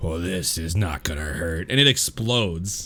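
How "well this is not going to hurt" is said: deep, low, soft voice. Voicing a masked figure as the grenade lands on it: deep voice. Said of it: "you just hear this deep voice go".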